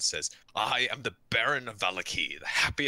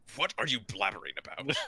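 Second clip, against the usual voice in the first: puzzled, bewildered, more confused than angry; 4 semitones higher, 3 dB quieter than usual. Narrator voices the Baron answering a self-proclaimed campaign manager, confused. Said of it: "looks more confused than angry".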